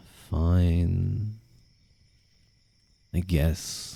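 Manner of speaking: soft, apathetic, done-with-everything emo voice. Trying out a voice they aren't sure how to do, in an apathetic emo voice. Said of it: "using the apathetic emo voice".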